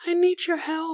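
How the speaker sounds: put-on very high, small, childlike little girl voice. Retelling what a girl standing there said to the speaker, in a little girl voice. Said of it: "This is my actual little girl voice".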